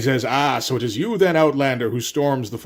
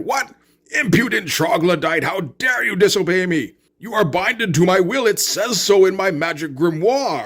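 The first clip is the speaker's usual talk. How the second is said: high-pitched outburst, losing composure entirely; 5 semitones higher than usual. Retelling a game cutscene where the sorcerer Magnar loses it at his servant: Magnar losing it. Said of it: "And Magnar kinda loses".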